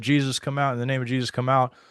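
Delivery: mild, called-out shouting. Retelling what people shouted from a distance: imitating people shouting. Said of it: "from a distance shouting".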